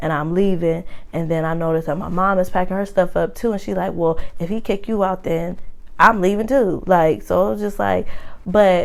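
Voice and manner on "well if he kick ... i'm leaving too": normal talking voice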